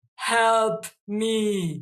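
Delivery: loud, mechanical robotic voice, me drawn out. Describing a vision, quoting a hybrid being in a robotic voice. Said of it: "this hybrid says in a robotic voice".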